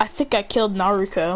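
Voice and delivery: ordinary delivery, nothing marked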